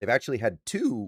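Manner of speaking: cracking, breaking voice mid-sentence. Speaker listing coaching award stats when his voice cracks: voice cracking. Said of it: "voice crack".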